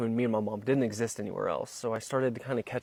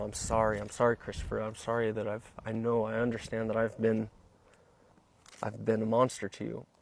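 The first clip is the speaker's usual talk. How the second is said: usual speaking voice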